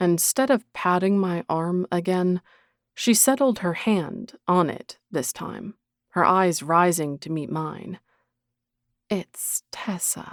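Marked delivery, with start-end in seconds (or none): 9.1-10.3 very quiet, breathy, hushed near-whisper. Narrator reading Tessa's line as she reminds him of her name: soft voice. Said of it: "in a soft voice".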